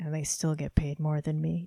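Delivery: put-on under-the-breath mutter. Retelling a remark their teacher made in the middle of class, under his breath. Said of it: "under his breath".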